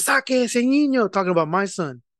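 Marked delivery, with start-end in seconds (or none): 0.0-1.1 excited yelling, high-pitched. Retelling what a lady at a youth soccer game yelled: imitating a lady yelling. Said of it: "one lady when she was yelling".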